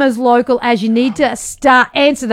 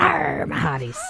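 very quiet, rough, rasping pirate voice; 11 dB quieter than usual. On the show, answering praise for a very good pirate voice, in pirate voice. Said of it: "A very good pirate voice".

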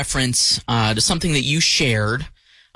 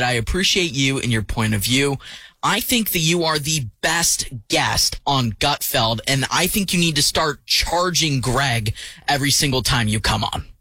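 usual speaking voice

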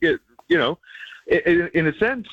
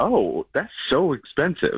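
plain

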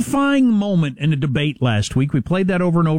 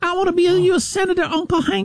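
put-on Southern young woman voice, higher. Mocking a candidate's way of speaking: Luann from King of the Hill voice. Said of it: "That's what she sounds like".

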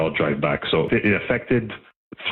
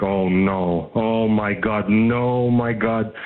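play-acted distraught, anguished oh-no wailing; 4 semitones higher than usual. Retelling hearing dad discover the stolen car, retelling dad's screaming in dismay. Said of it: "him basically like screaming like".

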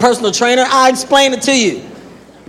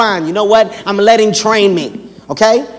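ordinary delivery

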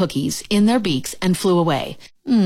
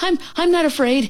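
high cried-out line; 9 semitones higher than usual. A shaking toad, fleeing a snake with his friend, crying out. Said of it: "he cried".

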